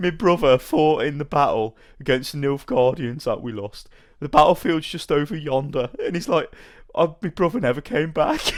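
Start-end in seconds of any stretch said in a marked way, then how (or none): 0.0-5.9 rustic peasant villager voice. Speaker describes a game villager talking to Garrett, imitating how the villagers talk. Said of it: "This is literally how they sound".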